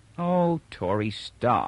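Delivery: worn-out, weary, tired voice. A woman answers Tori, who keeps asking what's the matter, wearily. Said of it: "she said wearily".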